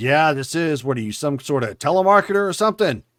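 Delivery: loud, rough, gruff voice. Voicing the person on the phone answering a caller: gruff voice. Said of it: "some gruff voice pick up the phone".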